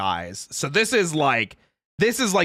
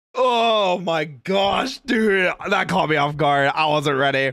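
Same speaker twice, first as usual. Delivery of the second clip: startled recovery after a near choke. Reacting to a clip after nearly choking on a drink: recovering from choking. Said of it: "I almost just choked".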